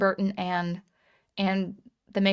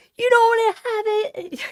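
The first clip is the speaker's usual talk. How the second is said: shrill, very high-pitched, loud, taunting delivery; 7 dB louder than usual. Imitating Shane Davis mouthing off when no one comes out of the door, in his very high-pitched voice. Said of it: "in his very high pitched voice".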